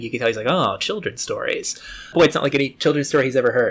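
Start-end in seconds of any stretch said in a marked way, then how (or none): 0.5-1.8 put-on soft, patronizing, slightly condescending tone. Retelling Noonan's reaction to children's stories: imitating Noonan, condescending. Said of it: "he's being a little, like, condescending".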